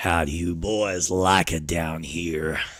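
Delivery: deep, low, put-on raspy voice. Playing a video game, the speaker puts on a low, raspy voice. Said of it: "start speaking this low just to make it really sound nice and raspy".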